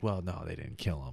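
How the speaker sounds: mocking whisper.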